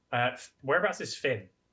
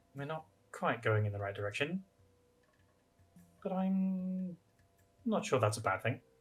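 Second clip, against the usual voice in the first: quiet, mumbled mutter under the breath, half to oneself; 4 semitones higher, 5 dB quieter than usual. Slowing to walking pace beside Reva to speak to her, muttering quietly under breath. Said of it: "mutter really quietly under my breath".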